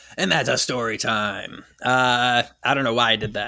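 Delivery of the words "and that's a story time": eerie, spooky haunted-house voice. Podcast host introducing the story segment: scary voice. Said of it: "a scary voice".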